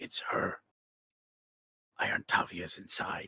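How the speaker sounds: breathy, hushed whisper under the breath. Rodolph freezes, waving everyone quiet, and warns them: Rodolph whispering. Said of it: "he's going to whisper".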